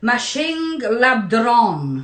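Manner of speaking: name given a French accent pronunciation. Pronouncing a name they can't say properly, French accent on the name. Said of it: "I say it with a French accent".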